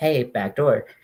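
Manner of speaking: relaxed, calm calling voice, not yelled. Speaker retelling how he asked to get off at the back door, a calm call-out. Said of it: "I didn't like yell it in like a like a crazy way".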